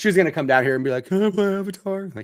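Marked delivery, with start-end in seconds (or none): 1.1-2.0 terrible put-on high-pitched child voice. A parent on a show imitates their daughter asking to play, terrible Kayla impression. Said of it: "I just made a terrible voice to impersonate my daughter".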